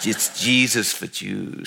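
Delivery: put-on Brooklyn accent. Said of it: "had that wonderful Brooklyn, you know, accent".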